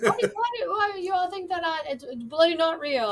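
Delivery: put-on high-pitched Australian accent. Retelling what a man in a bathroom line said, in an australian accent.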